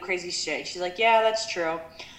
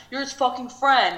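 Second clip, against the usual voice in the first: put-on mild, heated, high-pitched half-yell; 5 semitones higher than usual. Recapping a TV show argument, retelling how one person yelled at another. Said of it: "Flex was yelling at Natasha".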